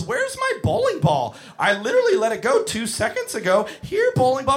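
put-on high, sing-song, clueless, lost-sounding kid voice.

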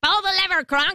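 wacky, high, crazy cartoon-villain voice. Retelling a movie where the wacky lady orders her henchman Kronk: villain lady's crazy voice. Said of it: "she's got this crazy voice".

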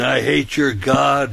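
acted-out male screaming. Retelling a man's outburst at a passenger during a ride, retelling a scream. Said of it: "started screaming".

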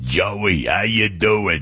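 put-on big tough guy's slow Brooklyn accent. Recalling the tough Brooklyn guy across the street, the speaker imitates a tough Brooklyn guy. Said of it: "That's the way he really honestly talked like that".

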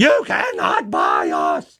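put-on very slow, dragged-out, high screaming cry. Reacting to a news report, quoting a woman from yesterday: retelling a woman's scream. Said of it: "the woman who was screaming".

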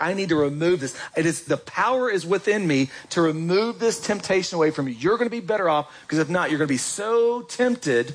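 usual speaking voice

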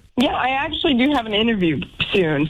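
fast, chipper and upbeat.

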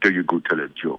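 put-on German accent, pitched low. Retelling what a German exchange student friend said in a theater, German accent impression. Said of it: "Best German impression I could possibly give you".

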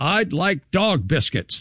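put-on eager, sing-song, drawn-out, swooping child voice, slow. Retelling a child ordering at a restaurant counter: imitating an enthusiastic confident child. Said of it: "with all the enthusiasm of a very confident four-year-old".

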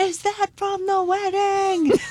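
imitated, put-on yelling. Retelling what fans outside shouted at a bakery truck: imitating fans yelling. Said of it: "they're yelling".

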